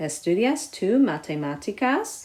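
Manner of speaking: rising question-like lift at end of matemáticas. In a Spanish lesson, saying a sentence as a question, rising tone on matemáticas. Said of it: "So you kind of go up with your voice at the end".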